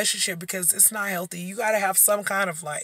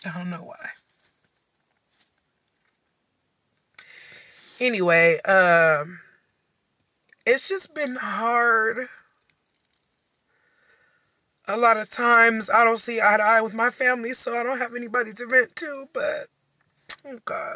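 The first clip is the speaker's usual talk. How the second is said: emotional, on the verge of crying, drawn-out "um"; 3 semitones higher than usual. Talking about hard times and having nobody to vent to, getting really emotional. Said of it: "really emotional".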